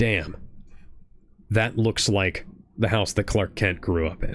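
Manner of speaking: usual speaking voice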